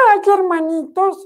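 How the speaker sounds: sugary, sweet little piglet voice, very high. Telling the wolf story, voicing the little piglet: sweet little piglet voice. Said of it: "la voz del cerdito chiquilín, que es muy dulce".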